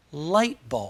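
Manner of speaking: light strong, bulb weak. Showing compound noun stress with an example, stress on light. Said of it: "the first word is always pronounced stronger than the second".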